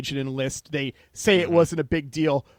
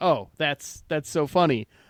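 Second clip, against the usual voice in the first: dry, unamused, without any laughter; 3 dB quieter than usual. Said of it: "you're not laughing".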